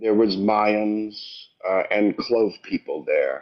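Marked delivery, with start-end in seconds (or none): 0.0-1.2 very slow, drawn-out speech on every word. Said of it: "He's talking too slow for me".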